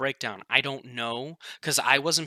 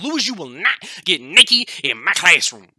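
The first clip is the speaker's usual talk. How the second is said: loud, stern, strict scolding; 4 semitones higher, 8 dB louder than usual. Retelling how a teacher told Lewis off in class, imitating a scolding teacher. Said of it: "she's like".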